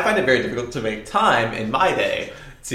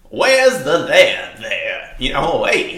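imitated Hollywood producer voice, louder; 2 semitones higher, 4 dB louder than usual. Acting out a big Hollywood producer pitching: big Hollywood producer voice. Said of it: "that's the voice that I'm gonna be doing".

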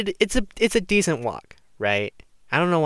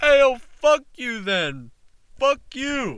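put-on guy voice, very high-pitched and squeaky; 12 semitones higher than usual. Retelling what a guy shouted while walking past: imitating Steve. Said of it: "Steve goes".

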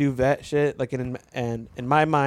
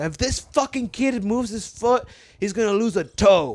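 high, drawn-out scream; 6 semitones higher than usual. Retelling how the doctor reacted to a kicking child: imitating a doctor screaming. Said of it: "the doctor just screams out".

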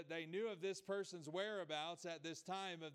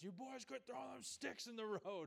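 put-on gruff grandpa voice, scolding, pitch raised; 5 semitones higher, 3 dB quieter than usual. Retelling a grandpa scolding boys by the road: imitating a gruff yell. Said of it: "my grandpa with his gruff voice coming yelling at us".

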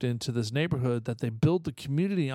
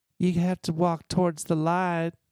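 put-on Georgia Southern accent, laid on thick; 4 semitones higher than usual. Quoting the small lady from the film: imitating a Southern Belle accent. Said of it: "Like a Southern Belle, like from Georgia".

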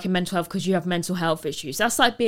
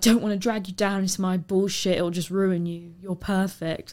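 put-on mock crying voice. Retelling what a date said while he was crying: imitating someone crying. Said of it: "crying and I was like".

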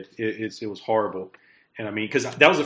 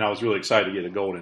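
normal talking voice

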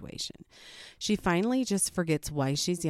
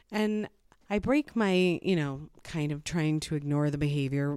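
normal talking voice

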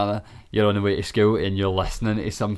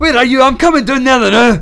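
high, loud, put-on furious shouting. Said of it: "you've got the impression nailed".

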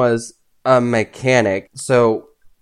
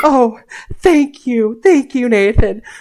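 put-on high, slow, gushing, grateful girl voice. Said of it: "she's like".

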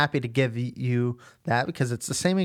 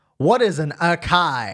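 rough, heavy, gruff, big voice; 3 semitones higher, 4 dB louder than usual. Speaker recalls a voice suddenly asking a question in the quiet early morning, big gruff voice. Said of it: "just big gruff voice".

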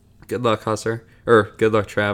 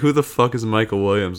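usual speaking voice

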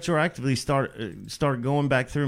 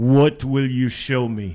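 put-on raised voice, foreign-accented English; 6 dB louder than usual. Retell what a man asked you about your next record, in a Dolph Lundgren-like accent. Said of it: "he's got this like Dolph Lundgren like accent".

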